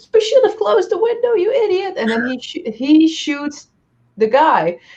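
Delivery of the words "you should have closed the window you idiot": very high, shrill, shrieking yell. Retelling a scene where a character yells at another: imitating someone yelling. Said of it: "she starts yelling at him, like".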